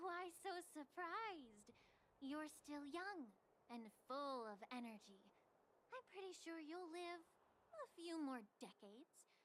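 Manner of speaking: heavily sarcastic, dripping sarcasm. A long-lived character replies to someone surprised by the wait: dripping sarcasm. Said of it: "Your words are dripping with sarcasm".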